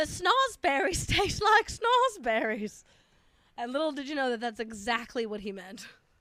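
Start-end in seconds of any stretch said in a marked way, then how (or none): 0.0-2.8 put-on loud, high-pitched British accent. Quoting a movie line, British-accented Gene Wilder impression. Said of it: "Gene Wilder did not have a British accent".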